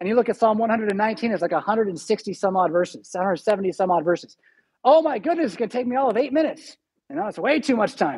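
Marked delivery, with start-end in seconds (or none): 4.8-8.2 put-on sarcastic, put-upon grumble with swooping pitch. Acting out a reader facing a very long psalm: mock sarcastic complaint. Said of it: "I'm being sar-, sarcastic there a little bit".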